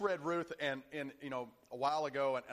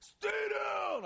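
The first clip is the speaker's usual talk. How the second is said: put-on very old voice, much higher pitch; 3 dB louder than usual. Retelling the Rocky fight scene as Mickey on the side, in Mickey's 90-year-old voice. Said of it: "it's like a 90-year-old voice".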